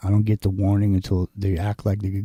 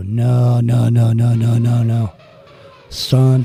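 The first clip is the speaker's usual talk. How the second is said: very slow, drawn-out "no"s, swelling louder; 2 semitones higher, 6 dB louder than usual. Retelling how Bob said no, starting soft and getting louder. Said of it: "it'd start out soft, and it would get louder".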